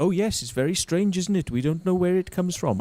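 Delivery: put-on very high nun voice, Welsh accent. Quoting Italian nuns talking about their calling: put-on Welsh accent. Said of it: "I'm putting Welsh accents on uh, Italian nuns".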